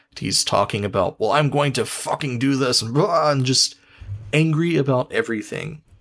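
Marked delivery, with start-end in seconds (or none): none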